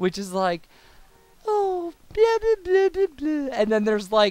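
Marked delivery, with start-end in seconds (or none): 1.5-3.5 put-on sugary, very high girl voice. Demonstrating one of only two girl voices they can do, a sweet girl voice. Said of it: "There's like a sweet girl voice".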